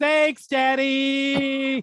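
very loud, high shout with daddy drawn out. Game master voicing a shout heard during a search for traps; Kendall's very loud shout. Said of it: "shouted out very, very loudly".

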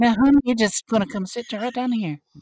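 very high, nerdy Southern lady character voice. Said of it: "Why does your [name] sound like a nerd?".

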